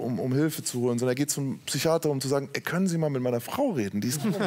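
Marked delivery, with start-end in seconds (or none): none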